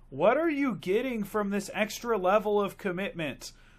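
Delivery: all-out shrill, loud scream. Speaker recounting a movie scene where Britta yells at the locker boys, imitating Britta screaming. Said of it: "she just screams".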